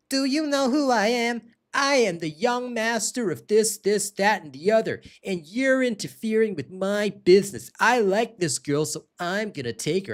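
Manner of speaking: high, whiny, nasal, pampered rich-youth voice. Retelling a scene, the speaker voices a rich young man, in a whiny nasal voice. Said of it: "the guy with the whiny nasal voice".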